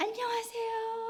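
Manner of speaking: high, slow, sweet and polite voice.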